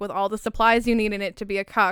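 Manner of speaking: normal talking voice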